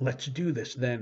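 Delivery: exclaiming. Lyle speaks to her after her unfinished question: exclaimed. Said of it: "he exclaimed".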